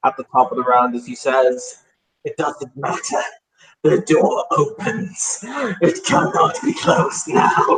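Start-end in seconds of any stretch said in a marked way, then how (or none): 2.2-7.8 slow speech with manic laughter throughout. Voicing him at the top of the round, laughing manically. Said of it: "he will start to laugh manically".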